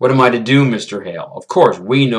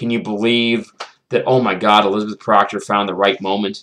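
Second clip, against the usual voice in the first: ordinary talk, nothing marked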